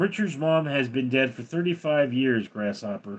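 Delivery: ordinary talk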